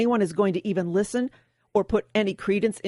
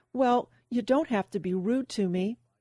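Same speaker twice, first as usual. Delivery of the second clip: courteous, with feigned hurt and mock sadness; 3 semitones higher, 3 dB quieter than usual. Retelling an argument with a woman, answering her politely with feigned sadness. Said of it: "politely and with a feigned sadness".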